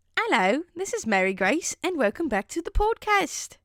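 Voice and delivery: put-on high-pitched old British woman accent. Mary grace welcomes listeners back to the podcast in an old, depraved british woman voice. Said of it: "I actually sound like an old, depraved British woman".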